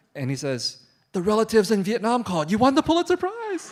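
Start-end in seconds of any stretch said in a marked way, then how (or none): 1.2-3.8 very loud voice, quivering and shaking with joy. Retelling a father's phone call about winning: imitating a voice shaking with happiness. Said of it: "is shaking with happiness".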